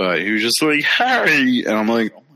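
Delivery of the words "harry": odd, high, weird frog-like croak of a voice. Mocking how an actor on a show said a name, in a weird frog voice. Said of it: "he had a weird frog voice".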